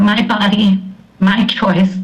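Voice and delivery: ordinary talk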